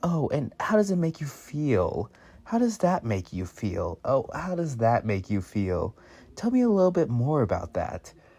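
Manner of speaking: sarcastic, sing-song, probing therapist voice, play-acted. Retelling joking with coworkers over a feelings wheel: sarcastic mock therapist voice. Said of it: "doing, like, the therapist thing".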